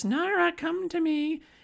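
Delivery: eerie, creepy voice, very high and slow. Retelling a scene where a girl hears a voice: creepy voice. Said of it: "then she hears a creepy voice".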